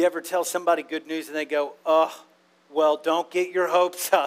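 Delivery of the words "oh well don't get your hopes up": dismissive, pessimistic, wet-blanket delivery. Retelling how someone answers good news: imitating a pessimistic person.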